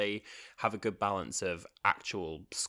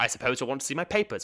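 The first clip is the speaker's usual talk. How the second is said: put-on imperious hero voice, higher and louder; 6 semitones higher, 6 dB louder than usual. Retelling a scene where the Doctor talks past a guard: good impression of Jon Pertwee's Doctor. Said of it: "That's quite a good impression".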